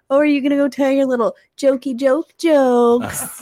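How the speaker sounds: loud, high-pitched mock playful teasing jab. Retelling how Danny roasts the speaker: imitating Danny teasing. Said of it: "now she'll be like".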